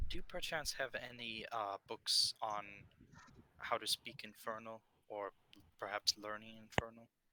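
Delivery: deliberately quiet voice. Speaking in character during a game scene: lowered voice. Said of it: "I'll lower my voice".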